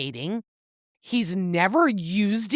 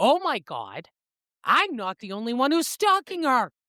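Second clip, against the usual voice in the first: put-on panicked voice, higher; 4 semitones higher than usual. Retelling a film scene, quoting Silas: imitating a panicked Silas. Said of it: "Silas immediately panics".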